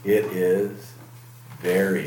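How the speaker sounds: ordinary delivery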